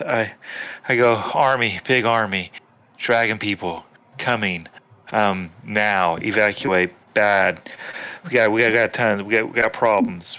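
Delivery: out of breath, huffing and puffing, stumbling words. Retelling his own words to a woman who tells him to slow down: acting out of breath. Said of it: "I'm just huffing and puffing and trying trying to get it all out".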